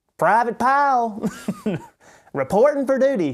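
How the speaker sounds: very high, swooping, pinched nasal voice. Trying out a voice described as nasally, the speaker does a nasally Private Pyle voice. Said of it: "You got to get it kind of nasally".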